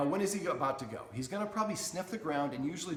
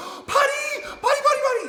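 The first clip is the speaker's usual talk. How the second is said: eager cheering, very high and loud, excited; 13 dB louder than usual. Explaining potty cues for dogs, the speaker demonstrates how owners sound, excited voice. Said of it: "We're so excited for them to go outside, but that sounds different".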